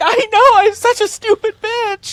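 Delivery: very high, loud, flustered, panicked mother voice. Recounting a video of a guy dressed as a mom: imitating a panicked mom. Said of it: "just being all panicked".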